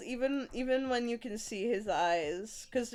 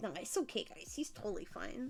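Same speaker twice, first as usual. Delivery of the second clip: whispered, weak, hushed, breathy put-on character voice; 7 dB quieter than usual. Imitating a sick man reassuring the group, not very good impression of him. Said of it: "in his voice like".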